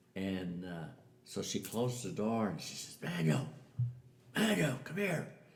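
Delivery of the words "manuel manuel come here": put-on old lady loud half-whisper, higher. Retelling how an old lady called a man to the door: imitating a hollered whisper. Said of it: "she's trying to be whispering, but I could hear him 'cause she had kinda hollered it".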